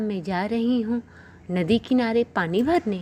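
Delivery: plain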